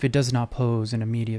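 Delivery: ordinary delivery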